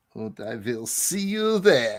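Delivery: creepy put-on German accent, low and hushed. Trying out a line while making it more German, put-on German accent. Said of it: "make it more of a German uh, laugh".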